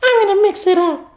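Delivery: very high, playful narrator voice. Practicing voices for narrating a partner's makeup: imitating partner doing makeup. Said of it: "practice my voices for whenever we do that video of me narrating your makeup thing".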